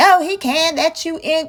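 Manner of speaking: slow, mean, nasty, unfriendly tone. Retelling the clerk refusing to let her into another line: imitating a nasty refusal. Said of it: "just being nasty".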